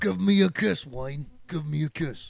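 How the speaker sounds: put-on English accent. Doing an impression for friends: Ray Winston impression. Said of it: "I'm Ray Winston".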